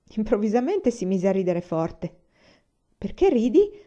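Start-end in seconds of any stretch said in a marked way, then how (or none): 2.9-3.6 high, loud, feigned innocent, play-dumb tone. [name] asks Bungee why he suddenly laughed: feigning innocence. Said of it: "con aria di finto tonto".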